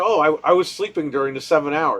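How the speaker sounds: plain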